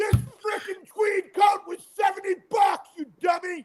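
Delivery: shrill, very high, playful, joking yell. Host breaks off to yell at their prop manager, mock yelling. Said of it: "I'm yelling at my prop manager".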